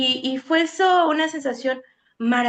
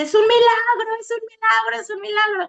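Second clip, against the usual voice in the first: high, sobbing, tearful crying shout; 8 semitones higher than usual. Telling a story, quoting a woman at the door who starts shouting; retelling a woman's crying shout. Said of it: "y empieza a gritar".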